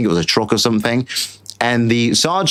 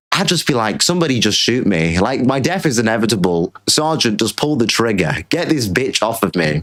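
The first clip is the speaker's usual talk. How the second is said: ordinary delivery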